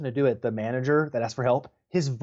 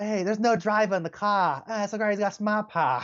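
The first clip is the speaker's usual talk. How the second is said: put-on Boston accent with raised pitch; 7 semitones higher than usual. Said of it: "The Boston accent".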